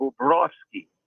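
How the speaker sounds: Bobrovsky with second syllable rov stressed. Sharing the russian announcer pronunciation of the name, stress on rov in bobrovsky. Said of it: "the emphasis would be on the Rovsky".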